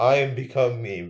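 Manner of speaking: slow, robotic, mechanical delivery. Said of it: "they're all just talking like robots".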